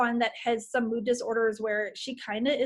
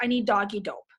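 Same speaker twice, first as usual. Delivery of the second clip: put-on, tearful crying voice; 2 semitones lower than usual. Retelling a call to the vet, imitating own past crying. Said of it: "calling the vet crying".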